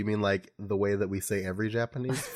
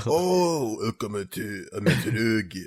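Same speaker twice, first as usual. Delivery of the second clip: TV announcer voice. A speaker shows how they say Japanese words, in a deep TV announcer voice. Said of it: "Like deep".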